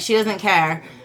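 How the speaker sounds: ordinary delivery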